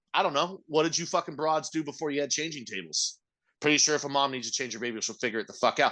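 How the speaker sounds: plain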